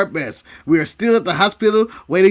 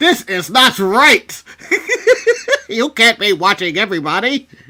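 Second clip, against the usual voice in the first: slow, deliberate delivery with swooping, swinging pitch; 2 semitones higher, 3 dB louder than usual. Acting out a scene from a film: Morgan Freeman voice.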